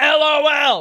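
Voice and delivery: very loud, very high, shrill screamed word. Reading out a quote written in all caps: screamed "LOL". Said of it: "He said that in all caps, so I had to scream it".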